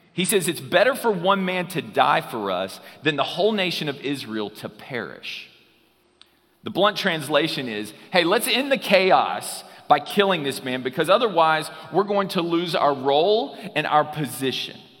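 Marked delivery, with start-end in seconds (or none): none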